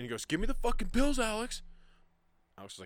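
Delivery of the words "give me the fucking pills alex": very high-pitched, shrill yell. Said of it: "then he just starts yelling".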